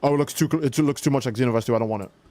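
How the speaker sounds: ordinary talk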